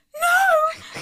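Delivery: very high, hysterical shrieking scream. Telling how she reacted to a cut-off ponytail at her stairs: retelling hysterical screaming. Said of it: "I'm screaming".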